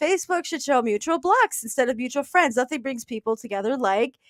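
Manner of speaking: usual speaking voice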